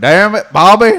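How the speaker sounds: very high, loud, barked-out cartoon voice. Saying the character's catchphrase on request: Hank Hill voice. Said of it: "That's close".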